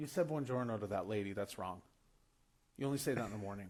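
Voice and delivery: grave, solemn, very serious, very low voice. Retelling a host's correction about greetings: imitating someone speaking very seriously. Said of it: "very serious".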